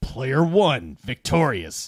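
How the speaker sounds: angry, furious robot announcer voice. Retelling how the defeated robot announces the winner: imitating William H. Macy's angry robot voice. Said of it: "you can hear William H. Macy's voice".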